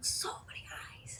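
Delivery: eerie, soft unvoiced whisper.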